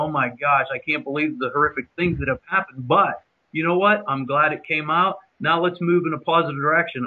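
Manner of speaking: plain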